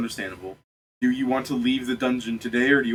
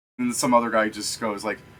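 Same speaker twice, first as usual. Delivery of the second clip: ordinary delivery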